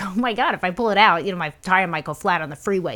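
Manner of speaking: ordinary talk, nothing marked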